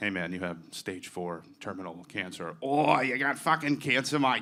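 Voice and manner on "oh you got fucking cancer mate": Australian accent. Imagining hearing the news from an australian dude, australian accent. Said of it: "I want that to come from an Australian guy".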